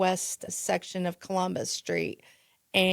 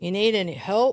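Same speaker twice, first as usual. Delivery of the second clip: gruff, raised voice; 5 dB louder than usual. Speaker retells a man in his police cruiser offering help: imitating a gruff voice. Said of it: "he kind of gruffly says".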